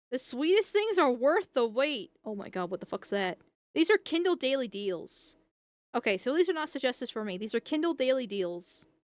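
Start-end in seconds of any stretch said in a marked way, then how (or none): none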